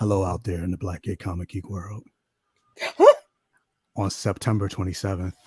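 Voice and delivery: very low, seductive come-hither voice, dropped right down. Asking listeners for birthday gifts, putting on a sexy Pedro Pascal voice. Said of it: "my sexy voice".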